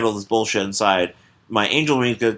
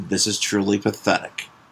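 muttering under breath, much lower pitch; 3 semitones lower, 3 dB quieter than usual. Retelling a scene where the guard, falling out the window, just mutters. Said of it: "He just mutters".

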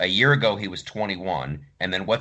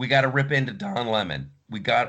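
voice cracking and breaking; 2 semitones higher than usual. Coming back for the second segment, the host speaks with voice cracking. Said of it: "did you hear my voice crack on that?".

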